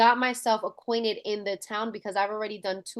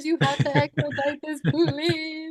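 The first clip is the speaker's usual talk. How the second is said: put-on tearful crying, higher and louder; 7 semitones higher, 5 dB louder than usual. Retelling pleading at city hall for a buyer's deal: imitating own crying plea.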